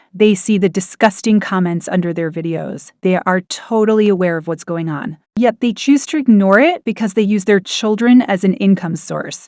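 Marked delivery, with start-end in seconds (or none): none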